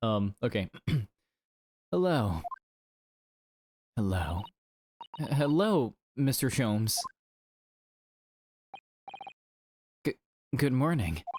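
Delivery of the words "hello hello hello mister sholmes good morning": put-on British accent. Voicing the character Iris, remembering to give her a British accent. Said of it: "I forgot to give Iris a British accent".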